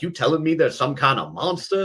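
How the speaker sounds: put-on slight Southern accent. Repeating a line a crew kept saying to the speaker on set, in a slight southern accent. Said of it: "a little bit of a Southern accent".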